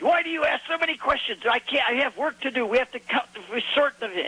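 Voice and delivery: put-on heavy, thick Hebrew accent, pitched very high. Quoting fishermen back from a long night, in a thick hebrew accent. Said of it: "In a very thick Hebrew accent".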